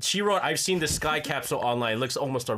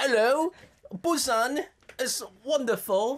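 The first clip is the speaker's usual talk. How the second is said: poor fake British accent, pitched up; 9 semitones higher than usual. Admitting they are terrible at accents, one host tries a bad British accent. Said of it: "We can't do British accents either".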